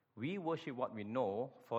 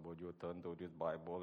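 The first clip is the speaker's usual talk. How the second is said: soft, flat, one-tone droning monotone; 6 semitones lower, 9 dB quieter than usual. Imitating the fellow giving the sermon, in a monotonous one-tone voice. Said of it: "talks in a monotonous one-tone voice".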